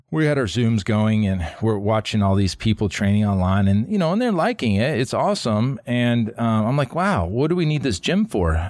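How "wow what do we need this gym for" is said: wry, dry, sarcastic marveling. Recalling watching people train on Zoom in the shutdown, speaker retells a sarcastic remark. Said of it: "I was being sarcastic".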